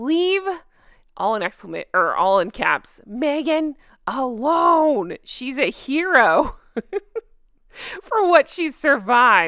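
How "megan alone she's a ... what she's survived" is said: high, slow, mocking sarcasm, "alone" drawn out. Reading aloud a sincerely posted comment, mocking sarcastic reading. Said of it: "I'm choosing to read it sarcastically".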